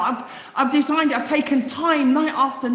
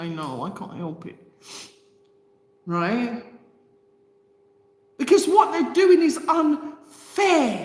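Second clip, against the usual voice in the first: tearful crying voice, speaking through tears. Speaking while apologizing for getting teary: crying. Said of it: "I'm sorry to cry".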